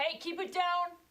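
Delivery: very high-pitched, shrill, loud yell. Voicing a guard telling noisy prisoners to keep quiet: guard yelling. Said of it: "one guard yells".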